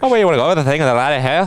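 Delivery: jokey put-on Irish brogue. Joking with another speaker about doing accents: put-on Irish accent. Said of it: "you're speaking Irish".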